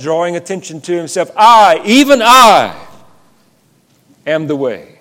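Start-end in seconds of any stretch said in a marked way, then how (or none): 1.4-4.8 put-on swooping, raised, very slow declaiming voice. Quoting one of the statements being discussed, acting it out with a raised voice. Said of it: "I suspect with a raised voice".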